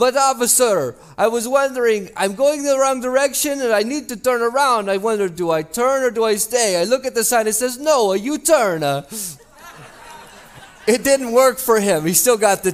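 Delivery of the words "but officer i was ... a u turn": best-try put-on Italian accent. Telling a joke, quoting a driver answering a police officer in an Italian accent. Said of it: "He tried his best Italian accent".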